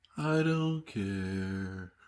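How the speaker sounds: cartoon donkey voice, "care" dragged and stretched out. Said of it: "You sound like Eeyore".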